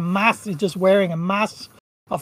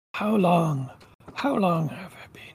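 put-on very old, gaunt voice, much quieter; 5 dB quieter than usual. A figure wandering and scratching at the wall, repeating his question: very old voice. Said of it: "very old, very, very gaunt".

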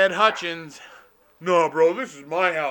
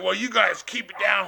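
mock angry cop voice; 3 semitones higher than usual. Telling a story about cops breaking up a party, imitating an angry cop. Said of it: "Then the cop gets all mad".

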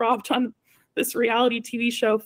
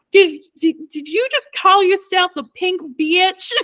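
put-on country accent, pitched higher; 7 semitones higher, 7 dB louder than usual. Retelling what Angeria asked during photos, in Angeria's thick country accent. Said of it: "in the most country accent ever".

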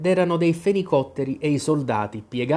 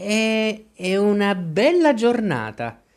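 small, high, timid voice with drawn-out È; 5 semitones higher than usual. A narrator reads a shy remark made to the story's main character, in a small timid voice. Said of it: "disse una vocina timida".

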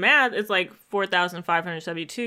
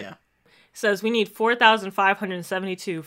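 plain

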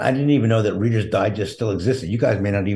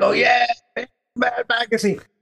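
acted-out mock scream, much higher pitch. Getting a text in a supermarket parking lot, retelling own screaming. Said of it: "and I start screaming".

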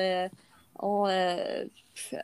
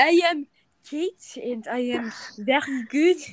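English in a put-on French accent; 4 semitones higher, 3 dB louder than usual. Introducing oneself in English so listeners understand, with a French accent. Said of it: "Je fais l'accent pour qu'ils comprennent".

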